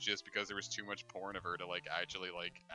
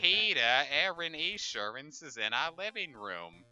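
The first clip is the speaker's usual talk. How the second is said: high, loud, swooping, drawn-out cartoon voice; 7 semitones higher, 6 dB louder than usual. Doing a Lois Griffin impression to a co-player. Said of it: "Also a direct quote".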